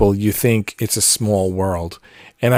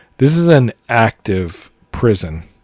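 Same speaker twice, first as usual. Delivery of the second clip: usual speaking voice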